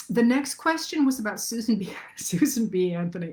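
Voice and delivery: talking while laughing through the words. Speaker reads out the next question, laughing while talking. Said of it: "I'm laughing because".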